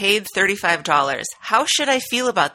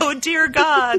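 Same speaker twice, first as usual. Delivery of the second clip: put-on laughing voice while talking, higher; 6 semitones higher than usual. Retelling Jen's reaction in a clip: imitating Jen laughing while talking. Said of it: "she was just laughing and going".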